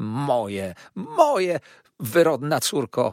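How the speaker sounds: loud, swooping, very slow, drawn-out crying out. A mother answers her married daughter's retort, crying out. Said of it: "wołała pani Merkleham".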